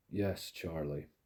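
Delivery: cold, deadly tone. Narrator reads a man's reply to someone screaming at him, in a deadly voice. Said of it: "he said in a deadly voice".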